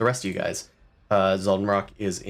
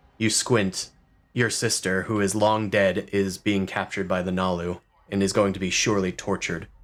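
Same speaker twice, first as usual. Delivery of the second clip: ordinary talk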